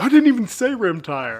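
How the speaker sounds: put-on fed-up, indignant protest, high and loud. Retelling how a brother protested a joke: imitating someone mad. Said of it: "he would get so mad".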